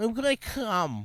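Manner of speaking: put-on whiny breathy voice. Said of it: "kinda Family Guy".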